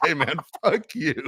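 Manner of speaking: mock very high-pitched, huffy, upset tone. Retelling a friend's parting words after thanking him for his service, mock-upset. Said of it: "he walks off all upset".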